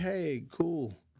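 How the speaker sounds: flat unexcited tone. Retelling a prize winner's reaction on the phone: imitating an unexcited winner. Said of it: "the lady wasn't even the slightest bit excited".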